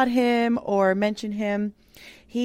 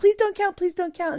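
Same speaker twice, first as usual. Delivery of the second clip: put-on very high, upset little child's begging, pleading voice; 10 semitones higher than usual. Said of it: "he kinda starts getting all upset".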